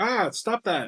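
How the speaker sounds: high, panicked, flustered, startled freak-out. Voicing Pyramid Head as he freaks out when shot: Pyramid Head freaking out. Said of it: "Pyramid Head, like, freaks out".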